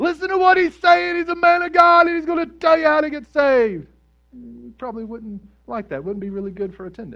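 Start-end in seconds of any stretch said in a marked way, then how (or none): 0.0-3.9 very high, loud, shrill, piercing scream. Acting out a lady in church who screams the whole time: imitating a lady screaming out. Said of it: "she would just scream out the whole time".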